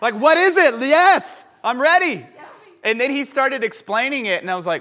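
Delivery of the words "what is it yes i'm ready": mock yelling, high pitch, drawn out. Retelling a string of texts, yelling at the phone: retelling yelling at a phone. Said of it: "I was yelling at my phone".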